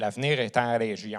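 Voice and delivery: put-on thick Quebec French accent. Quoting the premiers and ministers in the thickest quebec french accent possible. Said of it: "avec le plus grand accent québécois que je peux".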